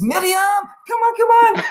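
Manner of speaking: put-on very high, insistent old-man voice, rising pitch. Retelling how an old persian man asked to cut in line: imitating an old persian man. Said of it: "and he says".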